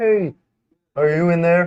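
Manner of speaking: high, loud, shrill, puppet-like cartoon holler. Asked to show a Muppet landlord voice for a planned movie, doing the Muppet landlord voice. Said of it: "Show me your Muppet landlord voice".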